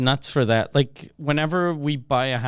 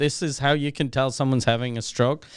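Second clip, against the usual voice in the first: usual speaking voice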